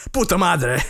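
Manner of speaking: spoken high in Spanish. Imitating a celebrity cursing the hosts out in Spanish: imitating Drake Campana cursing in Spanish. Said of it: "He would just curse us out in Spanish".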